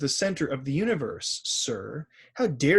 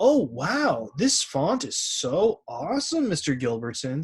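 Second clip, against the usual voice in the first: slow, mocking, sarcastic, insincere tone; 2 semitones higher than usual. Reading an example sentence aloud for the word sarcastic: sarcastic tone. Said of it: "said Savannah sarcastically".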